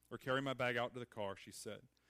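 plain

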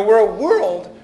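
voice breaking mid-word, loud. Speaker addressing listeners, voice cracks mid-sentence: voice cracking. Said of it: "voice crack there for a minute".

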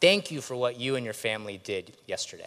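mock sarcastic delivery. Retelling a friend's remark in a somber class: imitating a sarcastic remark. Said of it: "sort of sarcastically saying".

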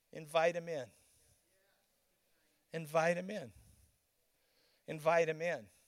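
soft, low, gentle pastoral voice. Retelling a second voice that came in behind the first, soft pastoral voice. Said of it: "A much more softer".

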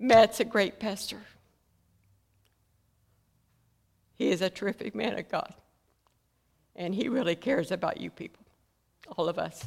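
tearful voice, crying while speaking. A speaker praising the pastor and asking listeners to remember them, crying while speaking. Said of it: "I just can't help but cry for them today".

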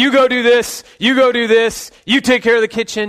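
barked, high-pitched, commanding dad voice, acted out. Retelling taking charge after his wife was wronged: dad voice, barking orders. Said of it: "I got my dad voice on".

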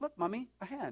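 put-on English accent. In a joke, a little Tibetan kid spots a hand and calls to mommy; English accent. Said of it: "they have an English accent".

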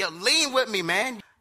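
high, stretched-out shout. Retelling how the brother-in-law on the motorcycle yelled back: imitating someone yelling. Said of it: "he yells at me".

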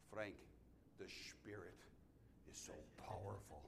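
soft, put-on German accent. Quoting what Mary used to say to him, imitating Mary's German accent. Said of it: "She used to say with a German accent".

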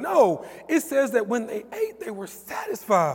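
cracking voice. Speaker who says they are sick explains a passage to listeners, voice cracking. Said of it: "my voice is cracking".

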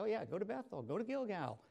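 mock-eager sarcastic sing-song, high and swooping. Paraphrasing a prophet mocking worship at shrines: imitating Amos, sarcastic. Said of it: "being somewhat sarcastic here".

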